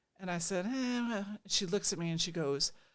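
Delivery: ordinary delivery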